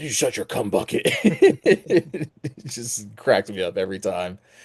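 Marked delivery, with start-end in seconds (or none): 0.0-1.0 very deep, gravel-low voice, quick. Recapping a show, quoting the actor's delivery: deep Batman-esque Soldier Boy voice. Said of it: "he affects this really deep, like almost kind of Batman-esque voice".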